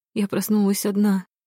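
plain reading voice

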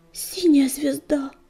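frightened muttering. Reading a story, a character calls out to the tribe's leader: frightened muttering. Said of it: "испуганно бормотал Огнегриф".

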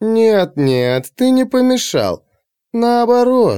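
drawn-out, very slow, very high, knowing drawl. The hetaera Phryne answers Alexei, who fears he has disturbed her, with a meaningful drawl. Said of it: "многозначительно протянула Гетера".

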